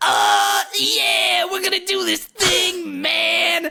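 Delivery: very high, slow, stretched-out creaky voice. Describing how a cartoon character talks: Donkey Kong voice. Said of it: "the Donkey Kong voice is like".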